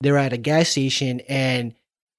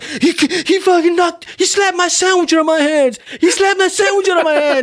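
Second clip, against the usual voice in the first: very high, loud, frantic acted-out rant; 6 dB louder than usual. Retelling a story about a fight: imitating someone freaking out. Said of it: "he's fucking tripping".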